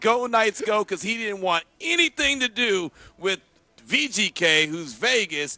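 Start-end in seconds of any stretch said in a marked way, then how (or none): none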